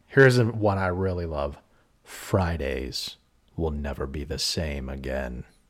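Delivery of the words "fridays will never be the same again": very deep, low, soft movie trailer narration voice. Speaker doing a series of trailer voices for the others, movie trailer guy voice. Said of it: "I'll do some more trailer guy voices".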